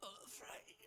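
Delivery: put-on sickly woman's voice, very high. Imitating how a sick woman sounded saying a name: imitating her sick voice. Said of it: "let me see if I can imitate what she sounds like".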